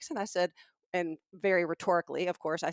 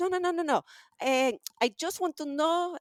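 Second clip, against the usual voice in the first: terrible put-on Israeli accent, pitched way up high; 10 semitones higher than usual. Act out a man stopping you about a question after you say you're not interested, terrible Israeli accent. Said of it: "it's a terrible Israeli accent".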